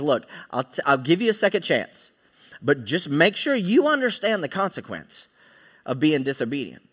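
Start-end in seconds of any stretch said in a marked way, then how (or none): none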